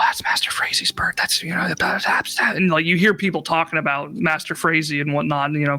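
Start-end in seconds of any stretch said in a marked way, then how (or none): 0.0-2.6 hushed, whispered, gossipy murmuring. Voicing townspeople who notice a bird passing: townsfolk murmuring and whispering. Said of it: "you hear some murmurs and whispers".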